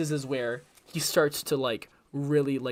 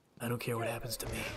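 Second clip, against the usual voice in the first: very hushed, low, barely audible undertone; 4 semitones lower, 10 dB quieter than usual. Describing what the quiet player Battinson is always like, quiet, low Battinson voice. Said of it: "Battinson has been very quiet... He's very low".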